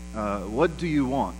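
put-on heavy, thick Turkish accent. Retelling what a manager said to you, in a heavy Turkish accent. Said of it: "said in a heavy Turkish accent".

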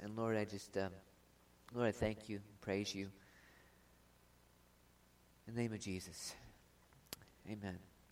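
slightly moved. Closing a prayer before reading a passage, a little emotional. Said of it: "I get a little emotional around Christmas time".

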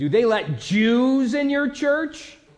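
booming shout, very high, very slow, rising. Retelling a man cleaning his boat answering about a church: imitating a very loud voice. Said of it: "with the loudest voice".

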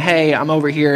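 normal talking voice

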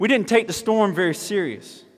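put-on high, country-accented voice. Quoting Timothy McDill's interview after the storm, in a country accent. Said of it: "I was trying to do the country accent".

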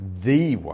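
heavy stress on the word "the". Explaining how the church's name is better pronounced, with stress on 'the'. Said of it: "better pronounced as the way, as in the one and only way, with an emphasis on that definite article".

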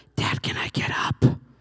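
put-on eerie, creepy little-kid whisper. Retelling their six-year-old at the bedside at 5 a.m., imitating a creepy child whisper. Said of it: "whispered in the creepy tone of voice only a small child can".

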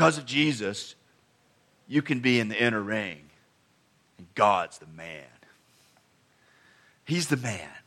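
deep, growly voice from way down low. Quoting what Steve Brown says, in Steve Brown's deep, growly voice. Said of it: "in his deep, growly voice".

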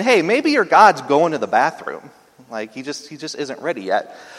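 put-on sneering, mocking voice with swooping pitch. Speaker retells Elijah taunting the prophets of Baal: acting out Elijah's mocking taunt. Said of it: "Elijah is 100% mocking these people".

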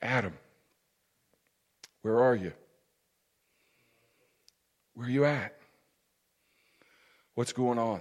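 very quiet, soft, small, very low voice. Preaching, the speaker voices God's words in a soft, small voice. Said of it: "have a soft, small voice and say unto him".

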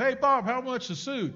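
high, loud, calling-out yell. Retelling a story of a clerk calling to the warehouse: retelling a yell. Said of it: "Mike would yell back to Bob".

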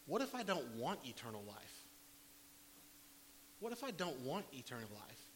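ordinary talk

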